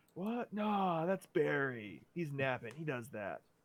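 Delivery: slow, spaced-out, stoned drawl. A player voices a character who is a little high, sounding high. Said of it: "He's a little high right now. / He's a little high right now. / Yeah, I mean other toughs, but no, man. This is our turf. Ain't no one step on our turf. Man, these butterflies are really neat. / He's".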